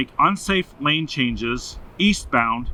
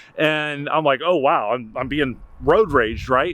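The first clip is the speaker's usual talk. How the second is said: usual speaking voice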